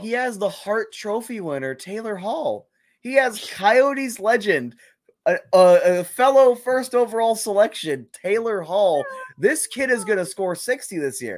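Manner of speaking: sarcastic over-the-top praise. Discussing a young player's supporting cast, sarcastic mock praise. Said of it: "I'm being sarcastic".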